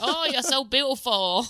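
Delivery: put-on poor stab at Australian accent. Retelling what her partner says while exercising together: Hugh Jackman voice, attempted Australian accent.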